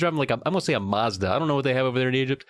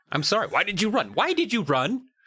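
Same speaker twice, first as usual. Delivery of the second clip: acted, irritated, insistent, pitched-up tone; 7 semitones higher than usual. Retelling a man repeatedly asking kids why they ran: imitating an annoyed man. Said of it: "He's so annoyed".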